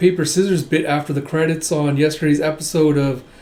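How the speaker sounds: ordinary delivery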